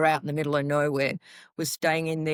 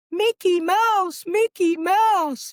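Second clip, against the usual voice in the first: put-on shrill, very high, very slow, stretched-out scream; 6 dB louder than usual. Retelling people running up and down a hallway: imitating screaming.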